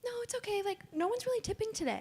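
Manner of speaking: sweet customer-service voice, very high pitch. Retelling what she said to customers about tips: imitating her high customer service voice. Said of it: "It's customer service voice".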